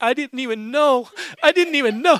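mock, high-pitched words broken by crying. Retelling a worried person's reply after hearing what God did: imitating someone crying. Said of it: "she just starts crying".

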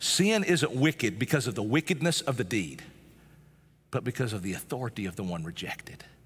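very slow, low, deliberate, drawn out word by word. Speaker repeats a statement to the audience so they get it, very slow. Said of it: "I'm going to say that again really slow".

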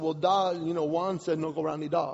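usual speaking voice

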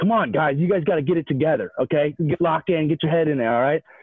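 put-on scolding yell, loud and harsh. A player retells his teammate scolding him and Craig; imitating a teammate yelling. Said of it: "Why are you yelling at us?".

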